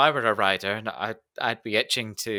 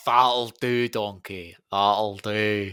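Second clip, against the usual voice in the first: put-on Scottish accent. Asked by the other speaker to do it again, in a Mike Myers Scottish accent. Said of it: "you've got the accent as well".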